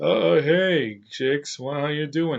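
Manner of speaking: suave, smooth-talking, easy manner. Describing a TV villain's manner, imitating his suave Captain Cold voice. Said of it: "His voice is like".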